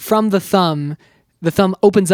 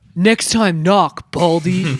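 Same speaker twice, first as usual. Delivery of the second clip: slow, drawn-out action-movie delivery, each word stretched. Retelling a line from the movie in a Keanu Reeves impression. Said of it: "I gotta do a, a Keanu impression".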